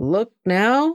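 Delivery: courteous, high polite tone. Narrating a man calling out to a woman after she orders a girl to dress, polite. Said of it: "all politeness".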